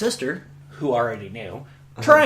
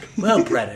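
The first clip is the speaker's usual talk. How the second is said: mock prim, very ladylike voice, lower; 5 semitones lower than usual. Retelling a mother's reply at the dinner table: imitating mom, very ladylike. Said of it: "very ladylike".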